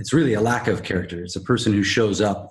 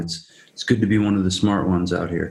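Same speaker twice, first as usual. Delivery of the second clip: ordinary talk, nothing marked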